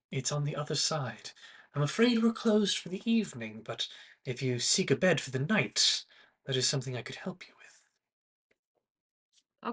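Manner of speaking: very soft-spoken, hushed voice. Character at the Moon and Mirror offers a late visitor a bed, very soft voice. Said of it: "his very soft voice".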